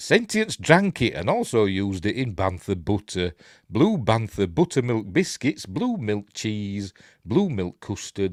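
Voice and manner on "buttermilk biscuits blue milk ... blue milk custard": ordinary talk, nothing marked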